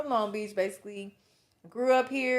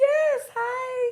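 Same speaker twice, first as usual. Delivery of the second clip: affected, very high fake put-on voice; 4 dB louder than usual. Special guest on a podcast greets the hosts in a fake put-on voice. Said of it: "that was such a fake voice".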